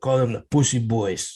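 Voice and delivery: put-on Spanish-sounding accent. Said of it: "so I get to do the accent".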